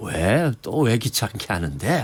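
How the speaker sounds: cool, slow, needling, sneering voice. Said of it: "성대모사 잘하시네요".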